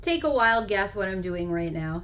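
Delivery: cheeky, sassy, teasing attitude. Asking viewers to guess what is being done: sassy tone. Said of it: "I'm being sassy".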